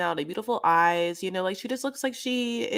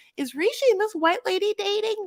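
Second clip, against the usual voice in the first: put-on high-pitched elderly woman voice; 10 semitones higher than usual.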